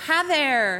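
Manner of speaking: put-on Southern accent. Imitating own customer service greeting: southern accent. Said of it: "I develop a Southern accent working here".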